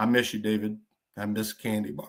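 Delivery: a little emotional, low and soft voice. Speaker remembering a friend's loyalty and addressing him, getting a little emotional. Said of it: "I'm getting a little emotional".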